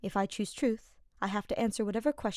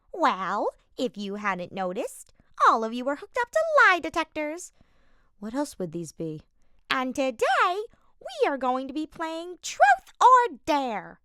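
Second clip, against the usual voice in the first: terrible, put-on screeching voice; 6 semitones higher, 8 dB louder than usual. Reading a story aloud, a character addressing the group in a terrible screeching voice. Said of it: "he said with his terrible screeching voice".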